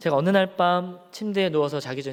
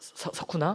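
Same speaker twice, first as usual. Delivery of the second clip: mock shaky, trembling, breathy near-whisper, stumbling on a word; 7 dB quieter than usual. Recounting finally speaking up to someone, re-enacting a shaky, trembling voice. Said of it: "약간 좀 떨리는 목소리로".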